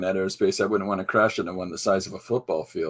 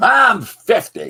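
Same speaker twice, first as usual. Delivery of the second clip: snarky, barked out, very loud and high; 13 semitones higher, 9 dB louder than usual. Describing how someone did Flo, the waitress on Alice: snarky Flo impression. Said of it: "she's just that kind of a tough broad".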